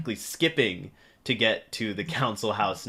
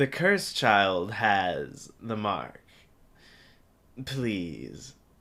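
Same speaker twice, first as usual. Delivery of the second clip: mocking words through laughter, "has" drawn out. A game master voicing a woman who looks up at the player, laughing while speaking. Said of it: "looks up at you, laughing, going".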